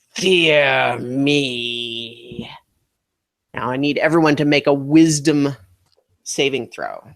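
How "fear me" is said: low, scornful, contemptuous voice, "me" stretched out. Voicing a dark figure speaking into the players' heads: contemptuous voice. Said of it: "is a contemptuous voice".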